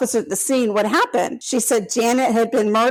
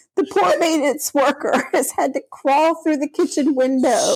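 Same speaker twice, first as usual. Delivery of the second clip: words broken up by laughter while talking; 3 semitones higher than usual. Reading a serious case account aloud, laughing while talking. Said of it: "Because I was laughing".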